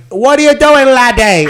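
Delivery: put-on very loud, very high, shrill British accent. Retelling what a British man said: imitating a British accent. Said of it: "total Brit, talked like that".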